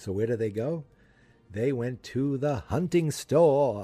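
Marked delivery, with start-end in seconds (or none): 1.5-3.8 drawn-out, exaggerated Boston accent, leaned into. Retelling a story's plot, say this narration line in an exaggerated boston accent. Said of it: "I love stressing that Boston accent sometimes".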